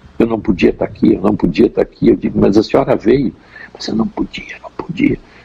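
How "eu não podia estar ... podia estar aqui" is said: put-on soft, hushed whisper. Recounting a woman who came to the speaker's office: imitating a soft whisper. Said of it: "falando baixinho".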